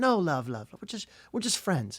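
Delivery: put-on English accent. Retelling a man's answer about whether she was his girlfriend, imitating an English accent. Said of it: "Had an English accent".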